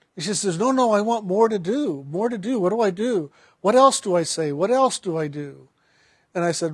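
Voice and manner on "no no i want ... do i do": ordinary delivery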